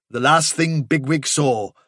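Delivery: ordinary delivery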